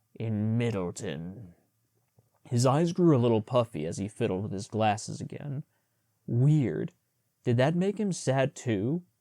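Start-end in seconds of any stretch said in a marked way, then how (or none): 0.2-1.5 firm, gruff voice. Reading a story aloud, a proud character threatens servants: firm gruff voice. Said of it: "he said in his regular, firm, gruff voice".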